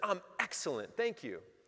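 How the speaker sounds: put-on, hugely positive, enthusiastic tone, high pitch. Retelling own answer to a woman at a window: imitating own enthusiastic reply. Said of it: "I said it with that type of enthusiasm".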